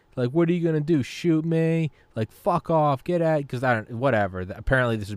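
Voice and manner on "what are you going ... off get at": put-on woman's yelling voice, pitched higher. Retelling a doorbell video where a woman yells at her neighbor: imitating a woman yelling. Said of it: "she's yelling at her neighbor".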